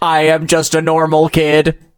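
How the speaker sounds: deliberately bad, flat, slow put-on robot voice. Speaker recalling a girl on an old show, in a bad robot voice. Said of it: "she did a bad robot voice".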